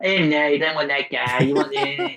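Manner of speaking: put-on, very effeminate, bitchy voice. Imitating a man who dismisses guys the women meet: imitating an effeminate voice. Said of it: "He'll do it in a very effeminate voice".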